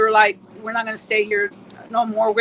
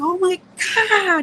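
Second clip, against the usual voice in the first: sudden high, startled scream of fright; 9 semitones higher than usual. Retelling seeing a strange figure outside: retelling own scream. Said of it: "So I just screamed. I was like".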